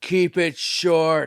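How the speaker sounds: loud shouted yell. Retelling what a guy in the crowd yelled: imitating a heckler yelling. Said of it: "a guy in the crowd just yell".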